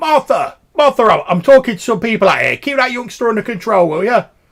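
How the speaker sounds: very loud, high-pitched shouting. A man shouts back into the building to someone inside, shouting back into the building. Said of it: "he shouts back in the building".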